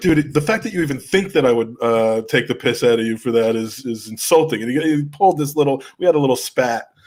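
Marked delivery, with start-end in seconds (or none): none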